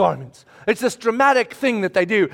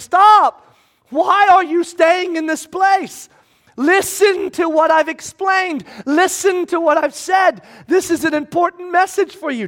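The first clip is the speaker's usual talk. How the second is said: put-on high shout at top of voice; 8 semitones higher than usual. Speaker acting out Paul pleading with the men: retelling a loud shout. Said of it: "shouting at the top of his voice".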